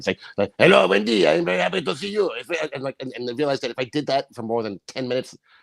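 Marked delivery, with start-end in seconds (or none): 0.6-2.3 put-on thick, hard-hit French accent, pitched up. Recalling how he spoke, greeting Wendy in a heavy French accent. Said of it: "it was very deep. It was much deeper and much more. I hit the French accent a lot harder".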